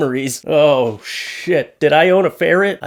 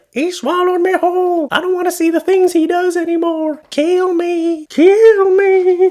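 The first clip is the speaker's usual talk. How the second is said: tiny, muffled woman's voice, very high. Imagining a little face tattooed on a man's back speaking, in a muffled little woman's voice. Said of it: "like a little muffled woman's voice like".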